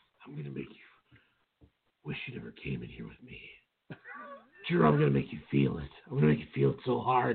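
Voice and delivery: hushed, whispered, taunting tone. Retelling what a wrestler said to his opponent: imitating Randy Orton whispering. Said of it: "Why are you whispering that to him?".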